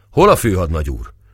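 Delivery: plain reading voice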